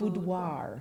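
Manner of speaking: slow careful pronunciation. Trying to say a word they struggle with after being urged, slow careful pronunciation. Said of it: "I have to say it slow".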